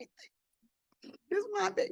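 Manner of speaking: soft unvoiced tearful whisper. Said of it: "I wanted to cry".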